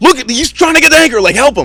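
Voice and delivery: play-acted, urgent, high-pitched, pressing tone. Retelling how boaters yelled at the speaker to help: imitating boaters yelling. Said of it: "they're yelling at me, like".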